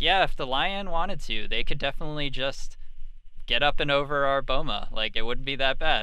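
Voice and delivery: acted bright, carefree, very happy, jovial tone. Retelling what a woman told the camera about the lion; imitating a happy, jovial tone. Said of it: "in a very happy, jovial tone".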